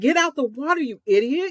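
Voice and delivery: play-acted, high-pitched, frustrated shouting. Describing rewatching Jaws, retelling screaming at the TV. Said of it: "I'm still screaming at the TV going".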